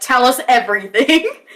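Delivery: imposing, intimidating, commanding voice. A player's character casts a spell to make their voice loud: really loud voice. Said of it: "make my voice really loud when I cast".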